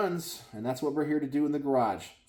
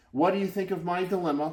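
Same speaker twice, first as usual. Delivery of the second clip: ordinary delivery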